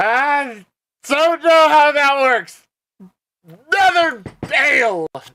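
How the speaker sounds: very high, loud put-on drunk dwarf voice. Voicing a dwarf, hammered even by dwarven standards, greeting a friend: drunk dwarf voice. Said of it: "even hammered by dwarven standards".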